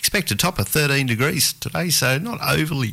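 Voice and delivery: words cut short, broken by a hiccup. Reading the weather forecast, interrupted by hiccups. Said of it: "excuse me, hiccups there".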